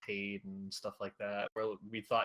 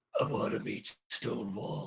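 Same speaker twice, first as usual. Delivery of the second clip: put-on, imitated very raspy voice; 2 semitones higher, 4 dB louder than usual. Retelling what a character said after getting caught: Damien's very raspy voice. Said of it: "in his very raspy voice".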